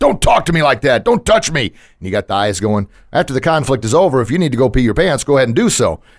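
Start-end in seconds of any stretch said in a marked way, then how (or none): 0.0-1.6 firm, commanding, pitched-up lion voice. Teaching how to defend yourself in a conflict with eyes and voice: lion-voice roar. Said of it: "we call it tiger eyes and a lion voice. You roar".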